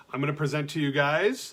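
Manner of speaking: plain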